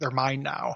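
mock whispered voice. Retelling a scene where a scary pale girl speaks: imitating a whisper. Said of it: "whispers, like".

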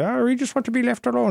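put-on very high-pitched, weird Glaswegian accent. Describing the Lerman from Clone Wars, quote them in a weird Glaswegian accent. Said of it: "They got like this weird Glaswegian accent".

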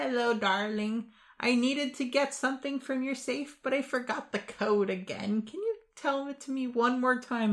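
sweetest grandmotherly voice, very high-pitched. Explaining a way to get a safe code by phone, in the sweetest grandmotherly voice. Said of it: "put on your sweetest, grandmotherliest voice".

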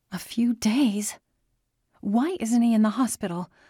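desperation rising, desperate and urgent. Reading a woman's reply after hearing the man is ill, desperate. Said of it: "New desperation blossomed in her voice".

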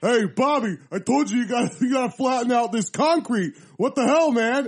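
loud, macho, manly tough-guy construction-worker voice. Retelling a comedian's bit about a construction worker: imitating a very manly construction worker. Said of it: "construction worker that's real manly".

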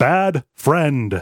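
put-on computer voice. Retelling a scene to a co-host, quoting Vendetta in Vendetta's computer voice. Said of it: "says in the computer voice".

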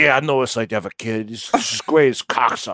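sleepy, bored host voice, nodding off. Retelling how he answers guests on his show: Joey Diaz impression. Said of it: "he's like".

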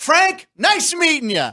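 pitched-way-up, loud call across a room. Retelling a bank encounter where a famous man calls out his name, retelling a loud call. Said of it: "to the whole bank".

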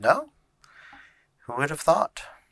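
sassy, very high, loud. Narrating a scene, voicing Miski as she shakes her head and interjects: sassy Miski voice. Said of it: "the sass that Miski has".

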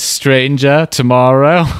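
weird, fake-sounding, put-on British accent. Showing how two words could rhyme: weird British voice. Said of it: "in a weird, uh, British voice".

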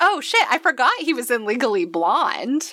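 startled, high-pitched burst of shock. On a podcast, talking with another host, suddenly remembering something: shocked. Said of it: "It's the shock in my voice".

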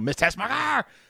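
deliberate high-pitched yell. Retelling a yelled line from a scene: Gene Hackman yell. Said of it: "the way Gene Hackman would always yell it".

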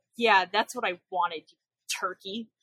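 play-acted, heavily laid-on sarcastic tone. Retelling a character's reply to another: imitating a sarcastic reply. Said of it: "Bill responds really sarcastically".

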